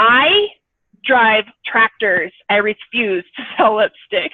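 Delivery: rude, slow, spat-out delivery.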